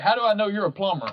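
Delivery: put-on Texan drawl. Recounting a job visit, the speaker quotes a customer's questions, doing the customer's voice as an impression. Imitating a Texan drawl. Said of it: "he talked just like fucking King of the Hill".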